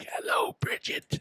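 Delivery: hushed whisper. Retelling how they greeted a nurse after surgery, whispering. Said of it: "I was whispering to her".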